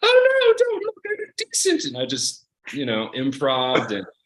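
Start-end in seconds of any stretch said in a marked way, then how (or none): 0.0-1.8 loud, very high stage falsetto. Retelling playing Juliet when the skirt fell off mid-performance: falsetto voice. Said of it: "this falsetto voice the whole time".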